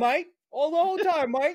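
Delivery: fake, put-on English accent. Joking that someone's daughter will end up talking like a movie kid; english accent. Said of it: "doing all the English accent".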